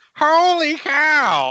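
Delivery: put-on very high, loud, shrill old-man shout. Exclaiming in an impression of a very old Harry Carey. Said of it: "That was Harry Carey when he was".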